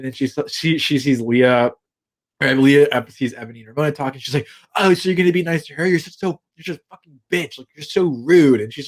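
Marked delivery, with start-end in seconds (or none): 4.8-8.6 mock heated ranting, yelling. Retelling Leah going around the house yelling: imitating Leah yelling. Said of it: "going around the house yelling this".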